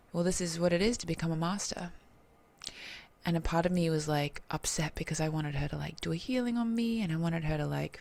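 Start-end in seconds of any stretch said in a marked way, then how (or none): none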